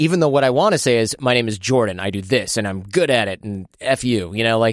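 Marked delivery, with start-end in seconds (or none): 1.2-4.3 bold, self-assured, confident, assertive delivery. Showing what one really wants to say: confident declarative tone. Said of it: "That's what confidence sounds like".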